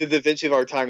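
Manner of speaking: normal talking voice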